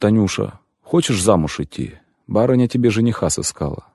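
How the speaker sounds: plain reading voice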